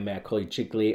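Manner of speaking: ordinary delivery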